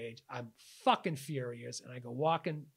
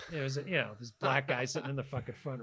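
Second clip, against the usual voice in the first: ordinary talk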